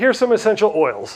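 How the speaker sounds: ordinary talk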